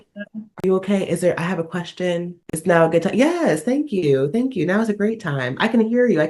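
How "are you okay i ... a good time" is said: put-on soft, gentle tone, much quieter. Acting out how she now approaches the speaker, imitating a soft, gentle tone. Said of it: "she's come at me nice".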